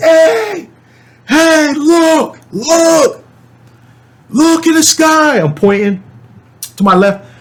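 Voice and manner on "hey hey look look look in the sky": mock very high, stretched-out, drawn-out scream. Retelling screaming at a group of guys who went quiet: retelling a scream. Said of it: "So I'm screaming".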